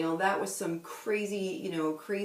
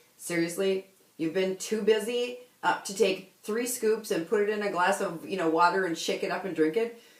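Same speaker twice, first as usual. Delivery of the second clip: usual speaking voice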